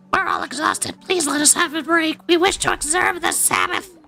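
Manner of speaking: very high, sing-song, swooping toad-like voice. Reading a game follower's request to the leader, in a toad voice. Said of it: "I give all of the followers in this game Toad voice".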